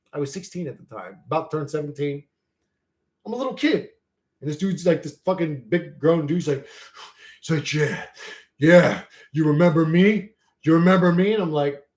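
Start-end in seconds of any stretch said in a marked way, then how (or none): 7.8-11.4 put-on pumped-up tough guy voice. Retelling a grown officer confronting a teenager: imitating a pumped-up tough guy. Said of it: "acting all tough, dude. He's, like, all pumped up".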